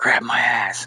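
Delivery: acted-out whisper. Retelling words said into his ear on stage: imitating a whisper. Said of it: "he whispers in my ear".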